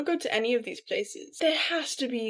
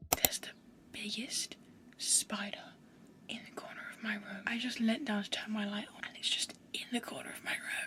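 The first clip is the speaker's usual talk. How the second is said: hushed, quiet whispering; 13 dB quieter than usual. Spotting a big spider in the corner of their room, whispering. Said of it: "I don't know why I'm whispering".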